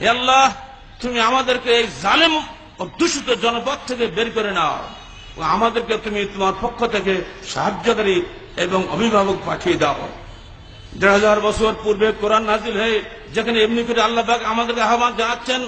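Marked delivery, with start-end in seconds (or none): none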